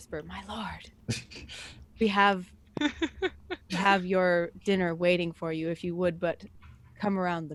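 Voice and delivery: hushed whisper. In character, a player speaks to the dragon, whispering. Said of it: "I whisper".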